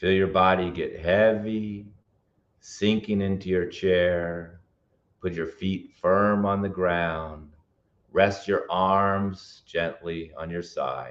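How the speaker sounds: slow, calm, toned-down delivery. Webinar presenter leading a relaxation exercise on anxiety, in a slow, toned-down voice. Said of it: "I need to slow down".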